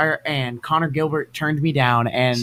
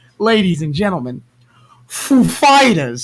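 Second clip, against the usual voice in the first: put-on halting announcer voice, higher and louder; 5 semitones higher, 6 dB louder than usual. Retelling how Christopher Walken announced a band: Christopher Walken voice. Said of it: "you know how Christopher Walken talks".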